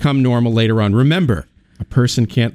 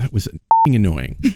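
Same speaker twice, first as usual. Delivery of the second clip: imitated muttering under the breath. Retelling own reaction to little things going wrong: imitating muttering under breath. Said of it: "under my breath".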